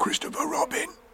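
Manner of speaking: loud, hushed, breathy stage whisper. Reading a story, a character stuck near the honey calls down to Christopher Robin: loud whisper. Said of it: "he said in a loud whisper".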